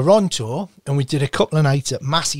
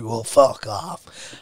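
put-on slurred drunk speech; 2 semitones lower than usual. Retelling what a drunk man said when asked to sign: imitating a drunk man. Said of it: "he was very drunk".

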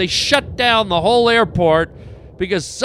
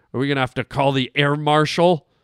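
ordinary talk, nothing marked

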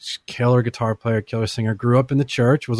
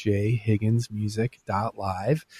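slow, deliberate, carefully spelled-out delivery; 6 dB quieter than usual. Repeating a web address for listeners, saying it slowly. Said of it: "I'll say that again and slow down".

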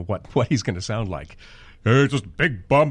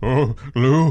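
put-on bombastic, blustery voice; 2 semitones higher, 3 dB louder than usual. Explaining where the character came from, doing a bombastic Ted Knight voice. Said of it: "this is sort of the bombast of".

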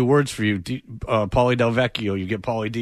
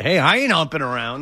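ordinary delivery

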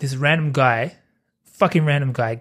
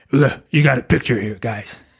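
put-on ghost character voice; 3 semitones lower than usual. Acting out a movie producer pitching to studios: Beetlejuice voice. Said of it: "Beetlejuice. That's what I sounded like".

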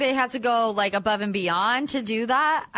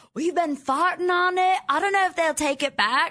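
put-on South African accent, pitched up higher; 6 semitones higher than usual. Retelling a talk about returning a mattress topper: South African accent imitating David. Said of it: "David in his South African accent's like".

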